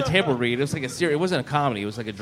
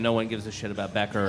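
ordinary talk, nothing marked

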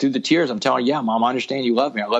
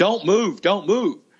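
put-on high, drawn-out screaming voice; 7 semitones higher than usual. Retelling an arrest, imitating a cop screaming at him. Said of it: "the cop is screaming at me".

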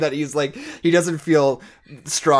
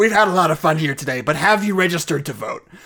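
put-on ghoul voice, higher pitched; 2 semitones higher than usual. Imagining the character staring directly into the camera, in a Beetlejuice voice. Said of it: "in the Beetlejuice voice".

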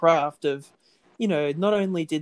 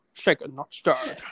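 put-on Scottish accent. Showing off voice impressions: Sean Connery impression. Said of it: "I can also do a bit of Sean Connery".

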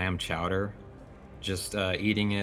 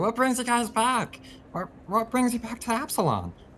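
happy, eager, delighted voice, pitched very high; 4 dB louder than usual. A player's character greets guests who have come back: with a big smile. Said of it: "I turn around with this big old beady eyes, the otter-like eyes, / I turn around with this big old beady eyes, the otter-like eyes, and this big smile. My whiskers still kind of like covered in some o".

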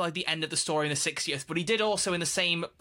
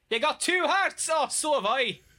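deliberately bad put-on Irish accent, very high pitch; 11 semitones higher, 4 dB louder than usual. Two hosts riff on a script line, in a bad Irish accent. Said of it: "that was Irish".

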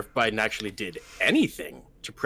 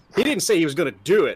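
usual speaking voice

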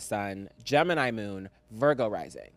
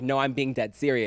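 ordinary delivery

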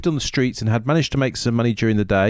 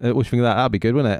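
plain

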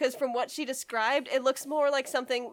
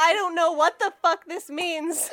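normal talking voice

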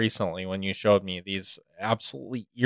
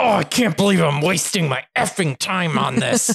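mock fury, higher and louder; 8 semitones higher, 5 dB louder than usual. Imitating a paid actor who watches a video to get angry: imitating someone getting furious. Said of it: "I'm gonna be furious".

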